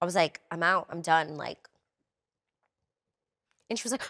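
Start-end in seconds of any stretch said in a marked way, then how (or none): 0.5-1.4 mock tearful, crying, breaking-down voice. Retelling breaking down on a phone call home: imitating own past crying. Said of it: "I lost it".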